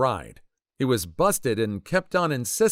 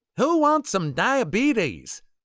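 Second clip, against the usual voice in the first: shrill country holler; 10 semitones higher than usual. Telling a story about a girl with a bag of chips, imitating her redneck-voiced yell. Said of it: "in a redneck voice yells".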